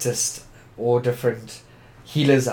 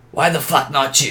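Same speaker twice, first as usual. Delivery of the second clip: put-on crazy, unhinged voice; 3 semitones higher than usual. Quoting what he always answered when the speaker questioned him; crazy voice. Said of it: "with this crazy voice and be like".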